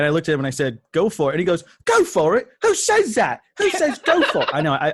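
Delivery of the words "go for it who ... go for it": terrible put-on English accent, very high, swooping. Retelling what a man behind the counter said, in a horrible English accent. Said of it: "I do a horrible English accent".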